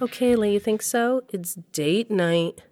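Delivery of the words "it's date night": sarcastic, mocking and slower. A mother answers her daughter before going out on a date, sarcastic. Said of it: "Don't say it like that, Mom. Like you think it's a joke?".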